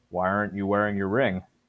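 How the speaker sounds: ordinary talk, nothing marked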